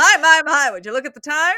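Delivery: put-on very loud, high-pitched transatlantic accent. Quoting a man who has to leave, in a transatlantic accent. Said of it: "he's got that transatlantic accent".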